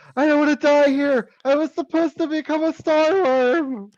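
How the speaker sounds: shrill, very high, panicked screaming. Voicing a prone character being chewed, near death: screaming in panic. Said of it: "he screams like".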